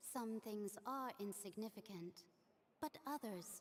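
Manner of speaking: plain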